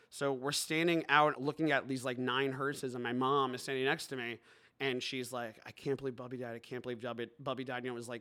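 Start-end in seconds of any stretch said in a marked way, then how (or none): 5.7-7.9 put-on tearful crying voice, lower and quieter. Retelling what mom said at a funeral, imitating mom crying. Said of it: "really crying".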